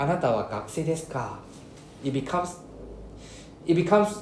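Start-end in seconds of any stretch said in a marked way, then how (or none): 0.0-1.4 final ka dropped low, falling pitch. Explaining sentence-final ka, end the question with falling pitch on ka. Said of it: "if you end with a lower pitch".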